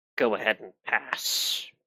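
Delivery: grumbling, muttered creature voice under the breath. Storyteller voices a spider as its legs click away, spider muttering. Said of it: "the spider mutters".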